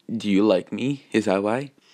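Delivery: ordinary delivery, nothing marked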